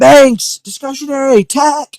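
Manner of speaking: loud, high-pitched screaming.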